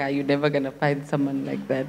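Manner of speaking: acted scornful laughter. Retelling a Tinder date who laughed at her: imitating someone laughing mockingly. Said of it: "this person literally laughed at me like".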